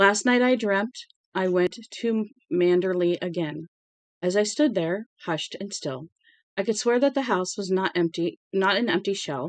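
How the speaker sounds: ordinary delivery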